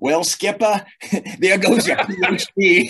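put-on ridiculous, over-the-top Maine accent, pitched very high. Retelling what his master chief told him, in a Maine accent. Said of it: "He had this ridiculous Maine accent".

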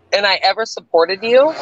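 ordinary talk

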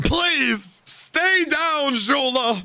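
high, very slow, drawn-out pleading.

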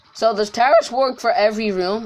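voice cracking partway through. A player asking a question aloud mid-game, voice cracking. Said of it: "My voice cracked there".

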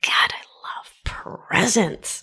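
slow, soft, gleeful whisper.

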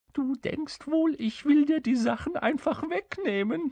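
very high, tittering, giggly, taunting voice. A little fellow speaks to the dumbfounded king, giggling. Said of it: "kicherte das Kerlchen".

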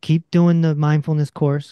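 ordinary delivery

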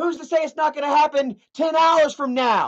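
yelling, high and ranting. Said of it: "Sorry, I'm yelling".

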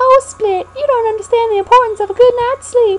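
southern belle character voice. In a voiced scene, one character speaking to split, southern belle accent. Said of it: "Why am I talking like a southern belle?".

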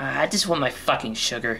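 mumbled in a put-on character voice.

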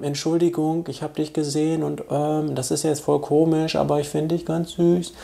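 soft, mumbled, indistinct, unclear delivery. Showing the wrong way, not loud and clear: quiet and unclear. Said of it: "laut und deutlich und nicht so zu sprechen, so".

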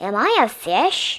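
ordinary delivery, nothing marked

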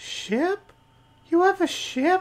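tiny, very high, slow, chat-like little voice. A voice in Ruben's head speaks to him, a little chat-like voice. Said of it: "this little like chat-like voice in your head".

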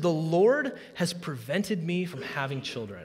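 usual speaking voice

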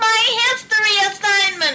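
high, shrieking outburst. Narrator voicing Louella as Otis rests muddy feet on her notebook: shrieked. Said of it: "Louella shrieked".

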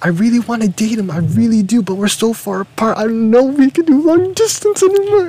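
overdone friendly voice, very high, swooping sing-song. Retelling how a friend talked about dating, imitating Caitlin. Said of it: "That's what you think I sound like?".

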